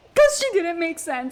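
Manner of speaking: loud frustrated screaming.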